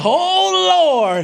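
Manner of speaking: mock startled, fearful cry, high and drawn out. Speaker acts out grandma's reaction to a kid acting up, imitating scared grandma. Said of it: "What grandma's scared now".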